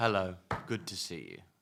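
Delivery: menacing, villainous delivery. Host greets the show's guest in an evil villain voice. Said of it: "Evil villain voice".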